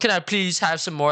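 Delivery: high-pitched pleading, begging tone. Retelling going back to a girl from seventh grade, begging like Oliver Twist. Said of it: "fucking begging, like, fucking Oliver Twist".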